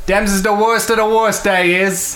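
put-on accent drifting from German to Scottish. Game master voices the queen answering players seeking a friend, Summer Queen voice. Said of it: "You see this beautiful woman sitting on the other side of the room. She's extremely pale with pointed ears. She's got long, flowing blonde hair. She's wearing a crown that bears a sun on top of it. And she's wearing ... Went from German to Scottish real quick".

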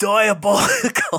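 put-on very high, loud, belted-out Australian accent. Introducing season 3 of The Boys, the speaker does a Butcher impression. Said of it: "I'm going to do my best butcher here".

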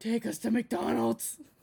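put-on demonic voice, half-conscious and groggy. Flopped in the passenger seat, telling the driver where to go, in a demon voice. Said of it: "a demon voice".

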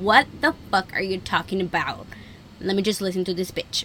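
plain

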